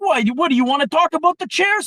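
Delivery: very high, very loud, shrill, furious outburst. Retelling a coworker losing it on a talkative man: imitating an angry outburst. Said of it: "He just starts laying into this guy".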